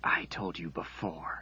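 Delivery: hissing through clenched teeth. Reading a story, she stands over him and speaks, hissed through gritted teeth. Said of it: "she hissed through gritted teeth".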